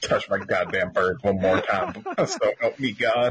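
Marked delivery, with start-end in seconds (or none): none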